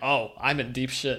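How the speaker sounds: acted calm, low, quiet voice. Retelling how Lirio reacted when Kiriko acted like cutting the rope, imitating Lirio's extremely calm voice. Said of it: "in the most calm voice you could ever imagine".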